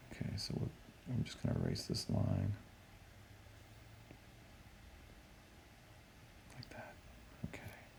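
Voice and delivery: soft, barely voiced whisper. Speaker erases a line while helping viewers study, whispering. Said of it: "I don't know why I'm whispering".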